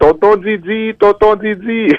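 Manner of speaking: put-on child voice calling loudly.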